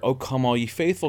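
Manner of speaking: ordinary delivery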